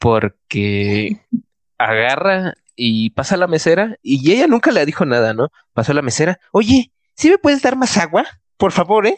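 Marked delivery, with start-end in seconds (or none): 6.5-9.2 very high, pitched-up, nasty, rude demanding tone. Retelling how someone asked the waitress for more water: mock-rude tone. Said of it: "pero con un tono culero".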